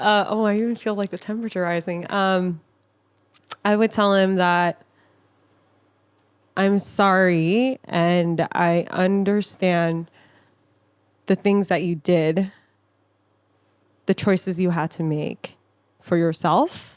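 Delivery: speaking through tears, crying. In a safe space, speaker says what they would tell him, crying while talking. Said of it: "I'm starting to cry now".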